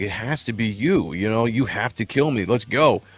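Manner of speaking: mock pleading, begging tone. Retelling the chieftain's words during the fight: imitating someone begging. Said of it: "he's begging him this entire fight".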